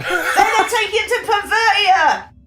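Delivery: shouting from below. Playing a character shouting a line from downstairs: shouting from downstairs. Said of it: "I'm shouting from downstairs".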